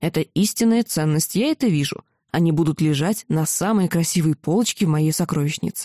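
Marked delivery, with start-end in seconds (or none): none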